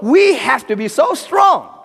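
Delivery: forceful, sudden, emphatic exclamation. Lecturing about purpose, saying one line with sudden emphatic exclamation. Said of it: "Emphasis, that's an exclamation point".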